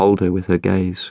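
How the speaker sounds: ordinary delivery, nothing marked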